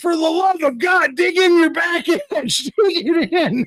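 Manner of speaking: mock very high, desperate, frantic screaming. Retelling a snow instructor's words on a fast slope: imitating someone screaming. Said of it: "And he's just screaming".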